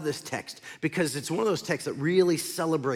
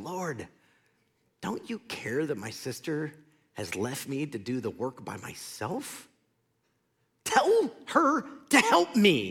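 exasperated, put-upon voice, swooping pitch, slow pace. Retelling Martha complaining to Jesus about her sister: acting out frustration. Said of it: "You hear the frustration in her voice".

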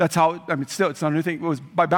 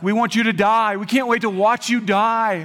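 acted, pitched-up crowd yelling; 5 semitones higher, 3 dB louder than usual. Retelling what a hostile crowd shouted at the condemned man: imitating a crowd yelling. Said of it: "they begin to yell at him".

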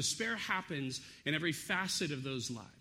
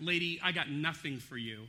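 mock sarcastic biting tone. Paraphrasing the king's reply to the woman crying for help: imitating a sarcastic retort. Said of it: "He's kind of being sarcastic is the way he's biting back".

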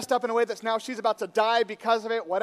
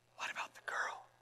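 soft, hushed whisper. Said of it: "she always whispers".

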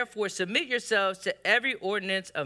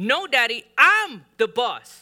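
put-on very loud, stern, insistent little-boy voice; 4 semitones higher, 8 dB louder than usual. Retelling a boy insisting to his daddy, imitating a boy's stern voice. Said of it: "and more stern voice".

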